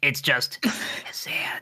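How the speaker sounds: hushed, breathy whisper, barely any voice. Voicing a character who corrects a name: whispering. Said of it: "and then she whispers".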